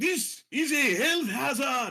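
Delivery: very high, slow, drawn-out crying out. Voicing a kenku being tackled to the ground: calling out. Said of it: "he calls out".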